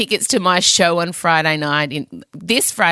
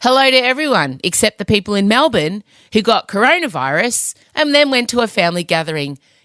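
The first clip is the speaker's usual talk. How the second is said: usual speaking voice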